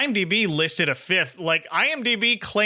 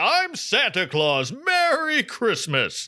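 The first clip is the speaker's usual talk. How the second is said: jolly delivery with lifted pitch; 5 semitones higher than usual. A speaker contrasts a gentle on-screen Santa with the usual one, in a projecting Santa Claus voice. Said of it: "I often think of Santa projecting more like".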